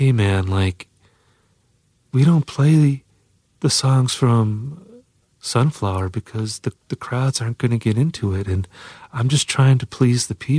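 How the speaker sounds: quiet, almost whispered voice. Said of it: "And he's speaking like this".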